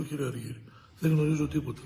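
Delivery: plain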